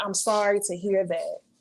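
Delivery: ordinary talk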